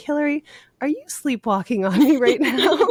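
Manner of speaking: small little voice. Retelling a pacer's question from behind during a night run: imitating a little voice. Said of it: "hear this little voice from behind me".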